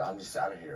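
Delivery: ordinary talk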